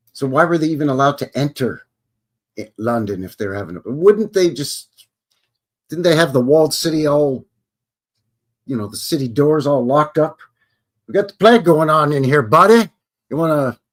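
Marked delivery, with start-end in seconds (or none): 11.1-13.8 loud, put-on Canadian accent. Acting out a guard at the gate of a plague-locked city, Canadian accent. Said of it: "I'm doing my Canadian talk".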